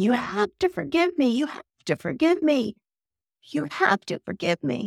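mock crying, high, tearful, desperate pleading. Retelling Carrie's scene begging her fiance to forgive her, imitating crying and screaming. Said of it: "she's crying and screaming".

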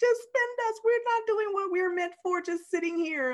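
very high, weepy, tearful, pleading voice. Describing an episode where money in a vault begs to be spent: mock crying and begging. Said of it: "it's literally like crying and begging to be spent".

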